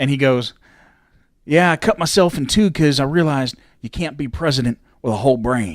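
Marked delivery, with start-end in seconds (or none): 1.4-5.8 put-on Texan accent, louder. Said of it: "you're doing a George W impression".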